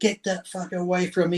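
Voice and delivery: put-on restrained outburst. Retelling how a man yelled at a waiter over cake: imitating someone yelling. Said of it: "He was yelling at the waiter".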